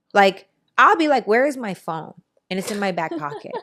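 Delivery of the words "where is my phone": normal talking voice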